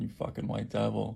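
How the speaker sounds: usual speaking voice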